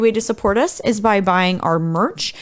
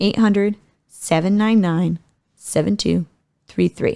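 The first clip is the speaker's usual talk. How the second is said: repeated more slowly, lower; 3 semitones lower than usual. Repeating a hotline number because the first time was fast: slower. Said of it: "I'm gonna say that one more time".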